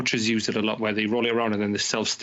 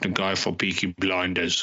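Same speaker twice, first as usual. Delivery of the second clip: low, slow attempt at a Bromley accent. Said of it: "That was my attempt at doing a Bromley accent".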